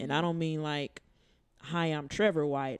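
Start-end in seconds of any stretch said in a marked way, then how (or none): 1.6-2.8 mock put-on voice, slower.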